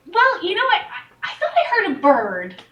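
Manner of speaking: innocent, eager, energetic, high character voice. Asked what she was staring at in the sky, she answers, naive and energetic. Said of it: "she's naive and energetic, / she's naive and energetic, not insane. / she's. / she's naive and energetic".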